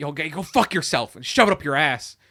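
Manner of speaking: mock condescending voice. Retelling Grandma ending a phone call with a senator, imitating a belittling tone. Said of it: "belittling this person on the phone".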